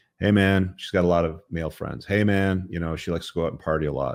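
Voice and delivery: ordinary talk, nothing marked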